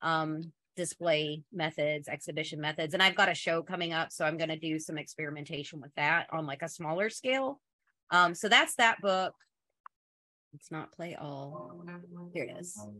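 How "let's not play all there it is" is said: much quieter, as if talking to oneself. Describing her upcoming show, she turns aside and speaks to herself. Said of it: "[To herself]".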